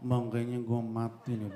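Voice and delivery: low, faint, weak dying voice, barely able to speak.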